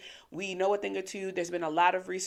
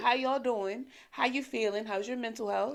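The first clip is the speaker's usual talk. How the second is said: soft, gentle voice, higher; 4 semitones higher than usual. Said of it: "Let's just switch the tone a little bit".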